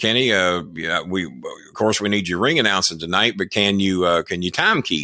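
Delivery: ordinary delivery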